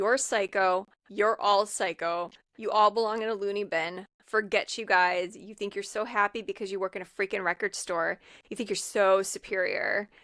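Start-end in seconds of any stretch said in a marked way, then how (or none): none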